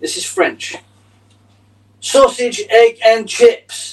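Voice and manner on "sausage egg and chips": very loud, very slow, high shrill shouting. Joking about speaking English to French people: pretend loud shouting. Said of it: "You say it really loudly".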